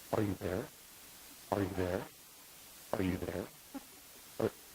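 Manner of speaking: very soft, hushed, whispered woman's voice. Retelling a prank ringtone that spoke to him: imitating a soft woman's voice. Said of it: "It's a woman's voice, really soft".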